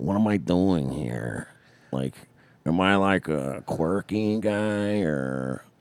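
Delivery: very slow, drawn-out drawl, every word dragged. Answering a comment about impressions, showing a Pete Davidson impression. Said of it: "Pete Davidson's more like, like this".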